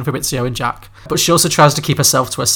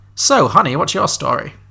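poor put-on old grand-dame diva voice; 2 semitones higher than usual. Retelling a character coming up behind a girl dressed as a boy, bad Kathy Bates impression. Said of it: "I've only got one old diva voice".

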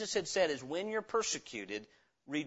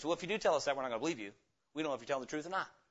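put-on indifferent voice, much faster; 3 semitones lower than usual. Preacher acts out a response to god's word, imitating an indifferent voice. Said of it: "Then there was a voice of indifference".

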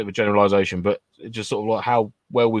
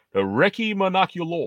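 put-on American accent, higher pitch; 8 semitones higher than usual. Showing how to say the product name, American accent. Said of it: "but the American accent".

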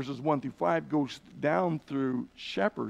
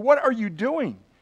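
rough, coarse-mannered voice, pitched up; 7 semitones higher, 5 dB louder than usual. Retelling a tour guide confronting a shepherd: imitating a coarse tone. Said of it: "in a very coarse kind of way".

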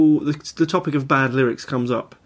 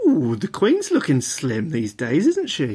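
camp, swooping, sing-song voice. Reading out a clue, the speaker says it in a camp voice. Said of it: "I said that in a camp voice".

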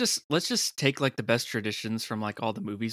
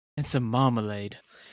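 terrible put-on British accent. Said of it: "terrible accents".

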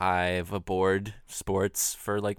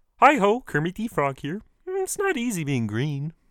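put-on puppet frog voice, much higher pitched; 10 semitones higher, 4 dB louder than usual. Surprising people who haven't heard you do it before, give it a shot: Kermit the Frog voice. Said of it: "I can do a pretty good Kermit".

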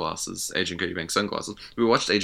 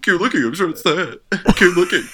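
very high, very loud, shrill mock voice; 11 semitones higher, 9 dB louder than usual. Teasing the other speaker by imitating him: imitating the other speaker. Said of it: "It's a really good impression of me".

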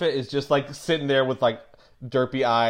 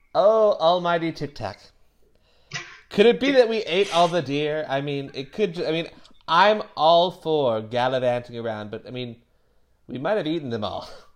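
goblin character voice. In a role-playing game, addressing the almighty tic tac, in a goblin bard voice. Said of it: "the Goblin Bard slash Rogue".

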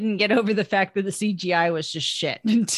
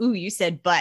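put-on snickering kid voice. Describing a silly moment in a movie: imitating a little kid's chuckle voice. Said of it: "little chuckle voice when somebody, like, a little kid goes".

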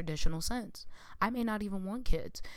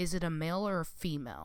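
disapproving tone with a negative edge; 4 dB quieter than usual. Acting out how he asks a question: mock-disapproving negative tone. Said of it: "in a negative tone, it's just his tone ... And he'll say it like that".

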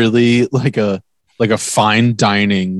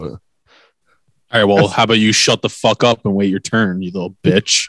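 mock angry outburst. Snapping at someone who started answering out of turn: mock angry outburst. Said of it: "He's angry".

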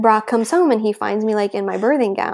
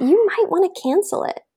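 high, offhand, mock-casual tone. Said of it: "so, um, casual".

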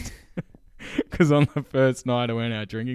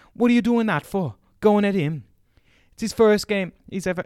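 pitched-up, high, loud, put-on Jamaican accent; 10 semitones higher, 6 dB louder than usual. Retelling how a teacher scolded a team mum: imitating a teacher in a Jamaican-sounding accent. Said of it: "sounding Jamaican now".

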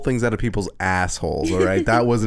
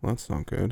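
mock muttering under breath, quiet, quieter; 8 dB quieter than usual. Imitating a doctor examining a naked patient: muttering under his breath. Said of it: "the doctor under his breath go".

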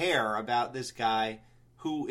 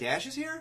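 high, soft, sincere and surprised tone. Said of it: "I think he was really asking me".

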